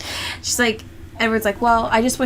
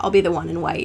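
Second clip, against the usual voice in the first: put-on flat monotone, lower and quieter; 10 semitones higher, 5 dB louder than usual. Acting out a character's reply for a friend while recounting a film. Putting on a flat monotone. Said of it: "when Edward gets all giddy".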